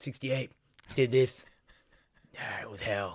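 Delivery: put-on deep old-soldier voice. Retelling the exterminator's lines: imitating a Vietnam vet recalling the war. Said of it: "refers to bug extermination how a Nam guy would".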